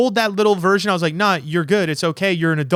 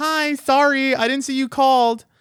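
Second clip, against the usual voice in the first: put-on girly reading voice, pitched up; 7 semitones higher than usual. Retelling how she read it out, in a put-on girl voice. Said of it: "I'll do it in the girl voice".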